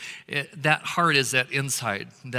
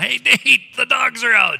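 shrill, loud, high-pitched yell; 11 semitones higher, 11 dB louder than usual. Retelling calling to a son that the dogs are out: imitating own yell. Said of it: "yelled at my son".

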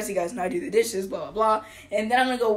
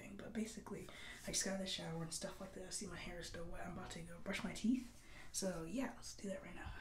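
hushed voice, much quieter; 3 semitones lower, 22 dB quieter than usual. Filming a night routine video while parents sleep, speaking quietly. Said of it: "Be kind of quiet because my parents are sleeping".

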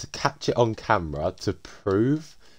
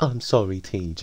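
put-on babyish, childish little-kid voice. Quoting a man apologizing to someone he had called a snob, in a childish voice. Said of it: "like a childish voice".

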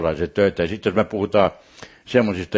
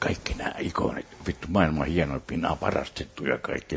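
whispered aside, much quieter; 5 semitones lower, 9 dB quieter than usual. Telling a church story, repeating what they whispered to a friend; retelling a whisper.

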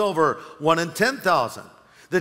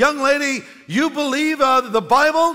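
put-on scornful big booming voice, pitched up; 8 semitones higher, 4 dB louder than usual. Telling a story, the speaker voices an atheist challenging a young girl: retelling a big booming voice. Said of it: "with his big booming voice said".

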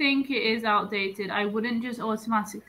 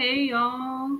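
put-on southern American accent, Texas style; 3 semitones higher than usual. Listing American accents she knows: imitating a Texas accent. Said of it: "second one is South, like, Texas".

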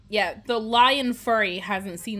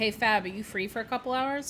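ordinary delivery

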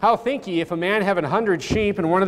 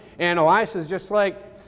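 normal talking voice

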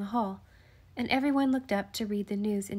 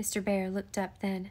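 plain

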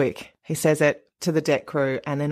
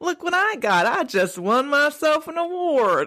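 clumsy put-on Florida accent, very high; 12 semitones higher than usual. Asked to do a woman's accent and admitting you are really bad, try a bad put-on Florida accent. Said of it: "Can you do the accent? I'm really bad".

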